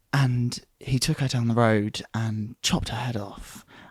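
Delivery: put-on calm, even, unbothered voice. Acting out how someone would tell it, in a put-on calm, even voice. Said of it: "how are you so calm as you say this?".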